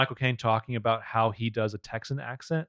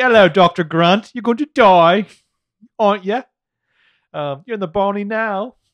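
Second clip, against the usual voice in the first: put-on very loud, high, evil, villainous British accent; 9 semitones higher, 10 dB louder than usual. Joking about velociraptors as villains: evil British accent. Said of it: "What if the Velociraptors all had evil British accents?".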